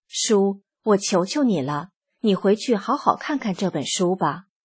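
plain

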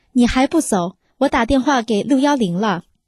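ordinary delivery

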